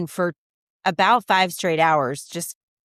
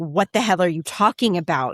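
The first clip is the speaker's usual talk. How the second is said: furious, angry outburst. Retelling a mother's reply to the stepdad: imitating an angry outburst. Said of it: "took it at the time with absolute vitriol and anger".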